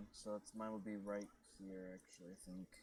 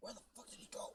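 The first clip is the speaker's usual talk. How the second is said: hushed whisper, pitched very high; 12 semitones higher than usual. A player's character creeps over and whispers to a companion, whispering. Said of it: "I whisper to you".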